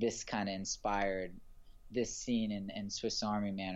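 ordinary delivery

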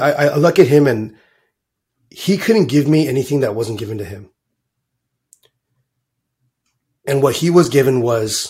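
choked-up, emotional, voice catching. Speaker talking about their father, choking up. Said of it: "I'm choking up".

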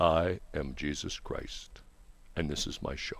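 very deep, slow, drawn-out, hushed voice. Retelling how a guy opens his call-in show, in a deep voice. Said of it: "A guy comes on deep voice".

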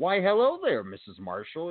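put-on high, sing-song, proper polite phone voice. Retelling how they talked once on those phones, put-on regular phone voice. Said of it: "they would talk regular when they would get on those phones".

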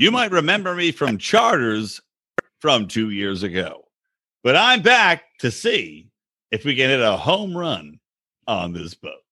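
animated put-on voice with pitch swooping up and down. Joking about a charter guest coming back: Johnny Damon impression. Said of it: "I don't think that's the way we talk".

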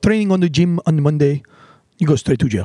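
put-on English with a Venezuelan accent. Quoting a man from the gym, the speaker does a Venezuelan accent impression. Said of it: "That's my Venezuelan impression".

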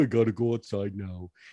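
put-on dog voice. Speaker explains how the family talks for the dog when it needs out, in Moby voice. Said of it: "we had our Moby voice".

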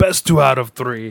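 put-on grim reaper accent. Retelling the Battleship scene where Death wants a rematch: Death accent. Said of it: "Is that your Death accent?".

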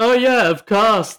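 sudden excited burst, high and loud.

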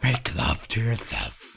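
high, laid-on, put-on demon voice. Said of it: "Demon voice".

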